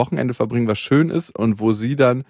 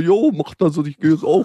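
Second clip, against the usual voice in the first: put-on, coarse, loutish, rough macho tone; 5 semitones higher than usual. Quoting another man's answer in a story: put-on chavvy boorish tone. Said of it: "so richtig prollig geantwortet, so".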